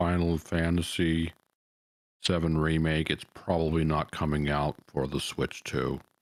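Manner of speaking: very slow, plodding speech with stretched, drawn-out words. On stream, talking over a soundboard people keep spamming, talking very slowly. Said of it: "why did you talk so slow?".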